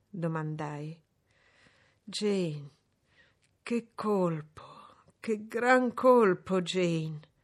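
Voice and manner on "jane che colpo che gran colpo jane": slow, drawn-out, staggering, reeling outcry. A man answers Jane's question whether he feels ill, exclaiming while staggering. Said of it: "esclamò barcollando".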